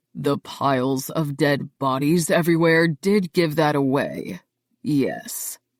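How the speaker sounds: low, slow, long drawn-out drawl. Reading a damaged dark character's line about dead bodies: drawling. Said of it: "says in a drawl".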